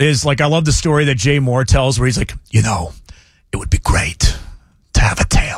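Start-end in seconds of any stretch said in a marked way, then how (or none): 2.5-5.6 breathy, whispered character voice throughout. Showing a whispering Christopher Walken impression, quoting a story. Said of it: "whispering Walken".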